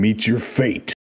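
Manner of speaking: fierce, held-in, restrained battle cry. Playing a character charging an enemy with two swords: screaming a battle cry.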